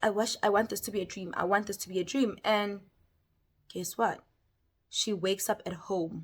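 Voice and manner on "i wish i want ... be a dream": put-on panicked voice. Retelling the character wishing it were a dream: imitating a panicking character. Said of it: "She's panicking".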